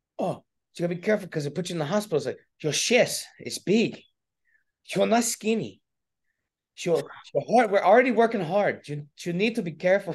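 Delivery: put-on thick Spanish accent. Retelling a woman's warning to be careful with hard workouts, in a thick spanish accent. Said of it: "she's got a really thick Spanish accent".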